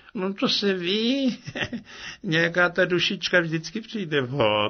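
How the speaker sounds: sheepish high pleading. The little water goblin answers an awkward question, embarrassed, almost begging for pity. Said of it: "souká ze sebe rozpačitě, skoro jako by škemral oslitování".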